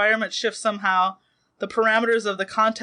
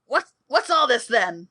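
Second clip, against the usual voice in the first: put-on voice of an alien woman; 3 semitones higher than usual. Voicing a Ferengi woman on a view screen: Ferengi woman voice. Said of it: "she sounds exactly like the Romulan".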